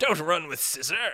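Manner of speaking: upper-class, posh English aristocrat accent. Joking with friends about how a phrase sounds: British aristocrat voice. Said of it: "like a British person describing it, like an aristocrat".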